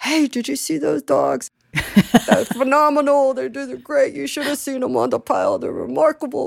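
put-on gushing New York accent. Retelling what a friend said, in his New York accent. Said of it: "in his New York accent, which I'm not doing it justice".

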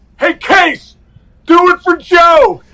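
slow, stretched-out, drawn-out yell. Recalling calls from the other dugout while on deck, imitating Don Zimmer yelling out. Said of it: "and he would yell out".

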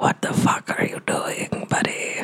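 hushed whisper. A character turns to Quinny and speaks into his ear, whispering. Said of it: "just kind of whisper in his ear".

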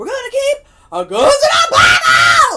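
very high, very loud, drawn-out full scream. Retelling a man on the news who screamed this line, screamed. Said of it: "he screamed like that".

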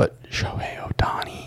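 whispered speech. Speaker raises a name nobody wants to hear, whispering. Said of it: "so I'm going to whisper".

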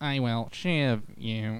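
mechanical, otherworldly, robotic alien voice. Brainstorming what aliens would call a shiv, trying an alien voice. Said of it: "All I can think of is alien voices".

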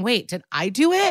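weepy, tearful, crying, pleading voice. Retelling a scene where a character starts crying: imitating someone crying. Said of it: "she starts crying, saying".

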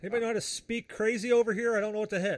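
high yelled call, shouting. Voicing a human calling over from the guard tower: NPC yelling. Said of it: "he yells over and he says".

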